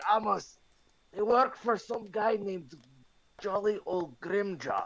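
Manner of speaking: whispered voice. Speaking in character to another character during a game: whispering. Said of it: "So I'm gonna whisper".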